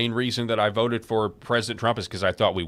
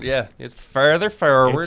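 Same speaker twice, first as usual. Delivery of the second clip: loud, put-on Irish accent; 3 semitones higher, 6 dB louder than usual. Practicing accents together with others, explaining where the sound sits: Irish accent. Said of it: "sound like a couple of Conor McGregors".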